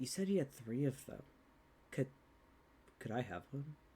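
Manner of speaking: hushed, very quiet whisper. Narrating a scene, voicing a character who turns to a player: whispering. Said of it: "He's he's like whispering to Tanari".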